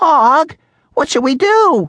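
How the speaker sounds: high, squeaky, tiny little voice. Reading a story, the narrator voices the hamster asking the frog Og: Humphrey's squeaky hamster voice. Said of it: "As the classroom hamster, I felt I had to squeak up. ... my voice is small and squeaky".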